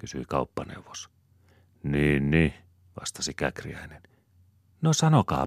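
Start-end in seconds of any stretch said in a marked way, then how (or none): 4.8-5.5 very high-pitched, coaxing, wheedling tone. Svea urges Käkriäinen to answer, coaxing. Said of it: "houkutteli Svea".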